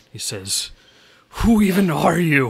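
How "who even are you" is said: wounded coughing voice, higher and louder. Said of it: "he kind of coughs".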